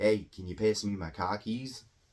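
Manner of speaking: caricatured Boston accent, laid on thick. Giving an example while explaining accent caricatures, caricatured Boston accent. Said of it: "it's not an accurate Boston accent".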